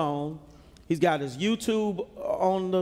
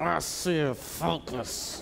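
put-on clenched-teeth voice, much slower; 3 semitones lower, 5 dB quieter than usual. Recalling being scolded by their mother as a child, imitating talking through clenched teeth. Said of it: "my mother would even talk through her teeth".

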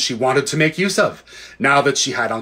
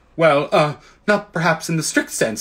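halting, stammering delivery; 3 semitones higher than usual. Questioned by a witch about his blood, a man gives a stammering reply. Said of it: "stammered Uncle Andrew".

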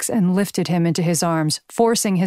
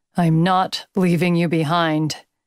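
ground out through clenched, gritted teeth. Crawling through smoke in search of his teammate Jax, speak through clenched teeth. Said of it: "he ground out against his clenched teeth".

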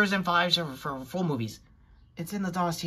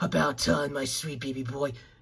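deep, gruff, heavy low voice; 4 semitones lower than usual. Imitating a comic-book character who was revived, in a deep gruff voice. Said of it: "if I had to do his deep, gruff voice".

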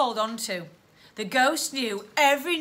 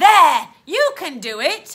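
very loud, slow, drawn-out encouraging exclamation; 4 semitones higher, 11 dB louder than usual. Soot calls to Stella as he guides her up the chute: exclaimed. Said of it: "exclaimed Soot".

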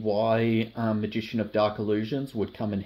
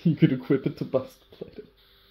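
fast talk bubbling with laughter; 3 semitones higher than usual. Presenting cards from a deck while laughing at their cat: laughing while talking. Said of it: "I'm just laughing about my cat".

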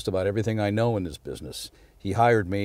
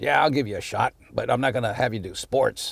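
rough, gruff delivery; 3 semitones higher than usual. Recall a 1976 phone call where Pete offered you a shot, in Pete's gruff voice. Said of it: "in his gruff voice".

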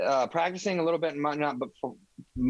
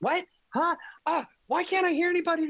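put-on, very high, exasperated complaining voice. Retelling how a woman at a loud place couldn't hear anyone: imitating a frustrated, angry woman. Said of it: "She was getting so mad about it".

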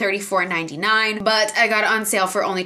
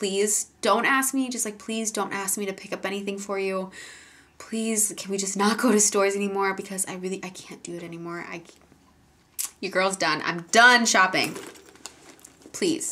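put-on pleading, begging voice, quieter; 6 dB quieter than usual. Retelling an earlier moment of begging mom: retelling own begging. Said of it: "begged my mom".

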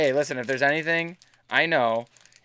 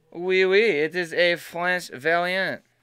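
fake French accent, slow and drawn out; 2 semitones higher than usual. Opening card packs and announcing a French variant card: put-on French accent. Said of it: "offend anybody with my accent there".

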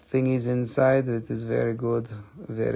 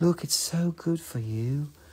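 hushed, soft ASMR delivery; 4 semitones higher, 3 dB quieter than usual. Pitching Moldavite to buyers, in an ASMR voice. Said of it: "I could talk like this".

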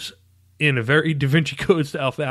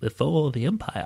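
put-on old wise man voice, quieter; 4 dB quieter than usual. Reminiscing about a galaxy's past: Obi-Wan Kenobi voice. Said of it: "That was perfect".

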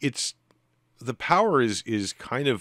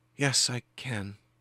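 higher, slow, timid, meek woman's voice. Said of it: "in a timid female voice".

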